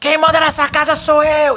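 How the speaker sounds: put-on angry shouting. Giving an example of a father asserting control: imitating a father yelling. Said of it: "aquele pai que grita falando".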